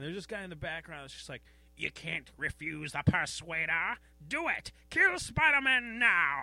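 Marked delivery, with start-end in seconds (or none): 1.8-6.4 booming, slow, menacing villain voice. Voicing a background villain in a Spider-Man scene, Persuader villain voice. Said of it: "That's my villain voice".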